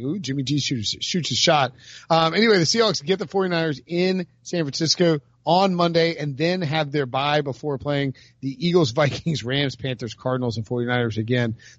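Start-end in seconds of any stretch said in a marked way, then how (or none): none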